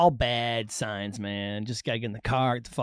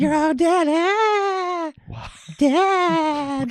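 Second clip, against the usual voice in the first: put-on spooky death voice, higher; 4 dB louder than usual. Redoing a line just done on the recording: put-on death voice. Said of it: "It's my fucking Death Voice".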